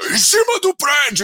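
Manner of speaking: high, ringing, mock bellowed shout. Telling a story about a big man at his side, retelling a shout. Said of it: "E aí o cara gritava".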